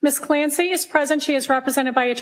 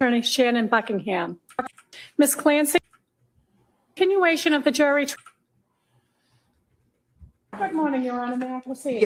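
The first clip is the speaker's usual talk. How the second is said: heavy, strong, obnoxious Massachusetts accent, laid on. An attorney introducing herself to the judge at a jury trial: obnoxious Massachusetts accent. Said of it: "This is an even more obnoxious Massachusetts accent".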